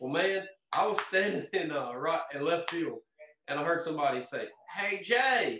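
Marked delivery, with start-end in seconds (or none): 4.7-5.6 put-on big rural Southern voice, higher pitch. Retelling someone calling out to him in the outfield, big redneck voice. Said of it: "in like this big redneck voice".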